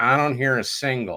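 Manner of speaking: slow, fake nasal voice. Acting out what an A and R man would tell the guys, in a really nasal John Kalodner voice. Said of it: "he's got this really nasal voice".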